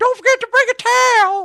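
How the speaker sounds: very high, loud, squeaky cartoon voice. Discussing impressions, the speaker demonstrates a high Mr. Hankey voice. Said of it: "Mister Hanky's way higher".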